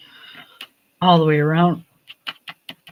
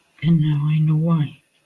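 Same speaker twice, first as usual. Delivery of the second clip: normal talking voice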